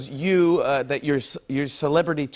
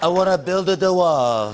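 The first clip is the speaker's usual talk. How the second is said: put-on Italian accent, higher and louder; 4 semitones higher, 5 dB louder than usual. Joking that the speech sounded Italian: Italian-accented Trump impression. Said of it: "sounded a little, well, I-, Italian?".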